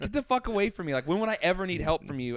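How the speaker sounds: fed-up, furious, heated, dismissive outburst. Retelling an angry exchange with police at an airport: retelling his own angry yelling. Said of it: "you're yelling at the airport".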